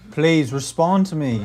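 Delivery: put-on British accent. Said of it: "Doing your British voice, though".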